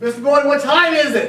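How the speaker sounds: loud, very high, angry drill sergeant bark. Prompting a listener to ask the time Marine-style, then demonstrating: loud angry Marine Corps voice. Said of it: "loud voice, angry, in your worst Marine Corps".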